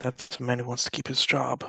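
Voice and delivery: hushed whisper, very quiet. Telling a companion a secret in character, whispering very quietly. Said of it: "Very quietly to her".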